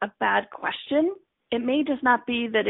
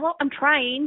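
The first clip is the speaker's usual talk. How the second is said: put-on Valley girl voice; 3 semitones higher than usual. Imitating someone making excuses about trying: Valley girl voice. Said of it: "That's my Valley girl coming out".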